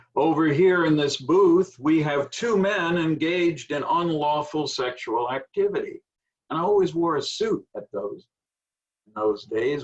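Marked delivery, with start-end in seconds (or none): 0.2-6.0 loud booming announcement, raised pitch. Retelling what a police officer called out at a sleazy place, in a booming voice. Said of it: "in a booming voice".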